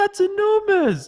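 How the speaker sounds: imitated yell. Retelling a friend's reaction to a missed putt: imitating someone yelling.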